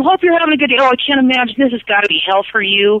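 ordinary talk

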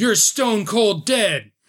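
very slow, high, drawn-out, bellowed yell. Voicing a charging villain taunting a player character: Lancelot yelling. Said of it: "Lancelot yells".

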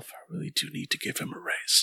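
whispered, barely audible mumbling mutter. A man is barely heard in his clean office, muttering to himself. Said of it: "you just barely hear him muttering to himself".

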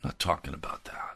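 hushed, low, unvoiced whisper.

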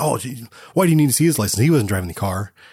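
play-acted, fast, all-indignant voice. Describing a film scene, quoting a character's reply to a cop; retelling indignant protest. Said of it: "she gets all indignant and says".

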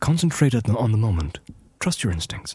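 put-on light Irish accent. Trying out voice acting lines, slight Irish accent. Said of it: "that slight Irish, I-, Irish accent".

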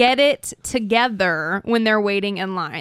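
ordinary delivery

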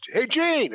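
loud high yell. Retelling a loud yell on an airport train: imitating Bobby Heenan yelling. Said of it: "He yells".

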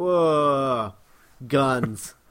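mock patronizing, low condescending drawl, drawn-out "whoa". Describing his reaction to others shooting the Robomen, mock-condescending. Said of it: "he very condescendingly is just like".

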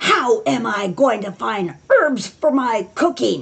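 play-acted furious woman yelling. A new gardener recounts a woman yelling at her, imitating a furious woman. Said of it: "she was furious".

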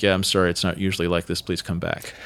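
very low, rushed, embarrassed and sheepish. Retelling what the man said after yelling everyone out, retelling a sheepish apology. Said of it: "very sheepishly is kind of like".

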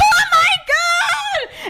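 very high shouted scream, shrieked and drawn out. Retelling a friend's reaction to a posted video: imitating someone screaming. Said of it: "And she starts screaming in the spray tan".

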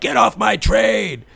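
very high, rasping, rough, furious shout. Retelling a movie scene with the subway ghost: imitating an angry subway ghost. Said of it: "this angry subway".

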